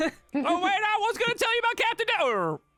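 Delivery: put-on grandma voice, pitched way up high. Calling someone back right after they say goodbye, in grandma voice. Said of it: "I will regale you in Grandma's voice".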